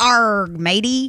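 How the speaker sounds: put-on old-movie swashbuckler pirate voice. Requesting a pirate impersonation, the speaker offers one first: pirate impression. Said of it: "Let me hear your best pirate impersonation".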